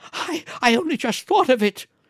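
very high, hysterical crying outburst. A wife, crying and laughing together, speaks to her husband hysterically. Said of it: "she said hysterically".

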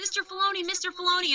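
mock very high-pitched, stretched-out, drawn-out yelling. Telling an escalator story, the speaker retells guys yelling someone's name. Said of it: "yelling his name".

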